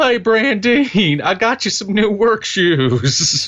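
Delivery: very high, dopey, dumb-sounding yokel voice. Riffing on making the character dumber, doing the stupid Cletus voice. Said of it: "A guy like Cletus would talk like this".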